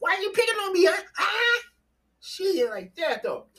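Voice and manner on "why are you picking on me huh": very high, indignant, angry voice. Recapping a scene where Sam shouts at Jason, retelling Jason's angry words. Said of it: "Jason is mad".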